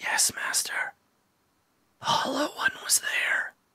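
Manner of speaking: very quiet, hushed, breathy wraith whisper. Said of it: "One of them whispers".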